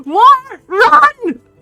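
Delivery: shrill, very high, very loud shout. Running past the others in the game, shouting a warning. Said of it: "Shout it".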